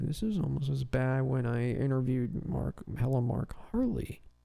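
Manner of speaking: put-on muttering under breath. Recounting what a man said while others looked bored, retelling a muttered aside. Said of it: "he tries to do it under his breath".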